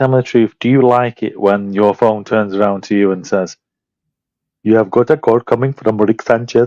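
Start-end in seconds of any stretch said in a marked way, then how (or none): 4.6-6.7 imitated Indian accent. Teasing the other speaker about their phone's voice, imitating an indian accent. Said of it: "set to sound like an Indian person".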